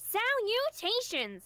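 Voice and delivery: very high-pitched, nasal voice. Explaining how they do impressions, demonstrating the nasally high-pitched Penny voice. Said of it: "nasally and high pitched".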